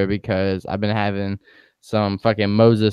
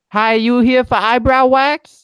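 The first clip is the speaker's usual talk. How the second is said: put-on very high, loud, shrill holler; 6 dB louder than usual. Retelling how a woman at the back yelled across the store, retelling a yell. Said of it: "she yells from across the store".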